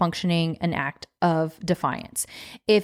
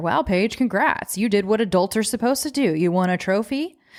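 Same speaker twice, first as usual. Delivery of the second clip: put-on sarcastic tone. Acting out your own inner voice after a basic chore, mock sarcastic inner voice. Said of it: "our inner voice might get sarcastic".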